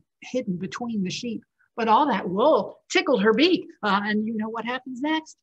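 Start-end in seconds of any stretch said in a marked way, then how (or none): none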